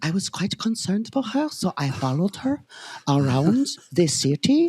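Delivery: odd, weird put-on European accent. Imagining what a belgian guy would say about following a girl, weird european accent. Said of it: "it's like a weird European accent".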